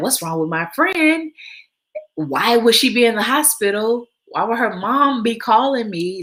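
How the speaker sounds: put-on frightened, nervous, high scared voice. Retelling what they said back then, imitating own scared voice. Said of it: "I was so scared for her".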